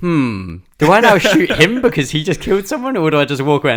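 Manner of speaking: high, loud mock pondering.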